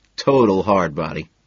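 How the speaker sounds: plain reading voice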